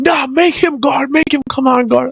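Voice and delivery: high, intense, worked-up screaming. Telling another speaker what he kept demanding in week one, retelling someone screaming. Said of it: "he's like screaming".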